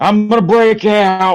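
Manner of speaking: very high, defiant priest voice. Riffing on a scene with the devil, speaking in a Father Thomas voice. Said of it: "That's my Father Thomas voice".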